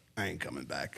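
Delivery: very low, hushed mutter under the breath. Retelling a reply to a request to come back: John muttering under his breath. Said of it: "Just right under his breath".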